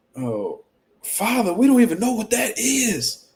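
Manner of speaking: mock aching, passionate, high, swooping, pained, drawn out. Retelling what Keyshawn said about his father: imitating Keyshawn's pained voice. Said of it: "you can hear the pain in Keyshawn's voice".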